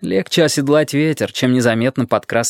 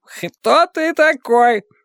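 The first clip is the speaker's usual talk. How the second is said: put-on loud, very high-pitched drunken holler; 14 semitones higher than usual. Narrator reads a skipper shouting at Dick as he sits back down, drunken shout. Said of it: "крикнул шкипер пьяным голосом".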